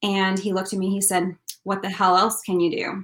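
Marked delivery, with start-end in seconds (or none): 1.6-3.0 imitated blunt, put-on voice. Retelling a specialist's reply about praying for a miracle: imitating a blunt doctor. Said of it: "very blunt".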